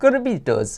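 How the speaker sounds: Italian-sounding, very high. Explaining how they pronounce the team name, with an Italian accent on 'Rabbitohs'. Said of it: "I say it like an Italian accent".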